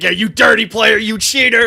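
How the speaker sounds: rough, loud screaming announcer-style rant. Retelling a radio announcer yelling at an ejected player: imitating the announcer yelling. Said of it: "yelling at that guy".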